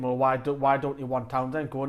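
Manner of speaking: usual speaking voice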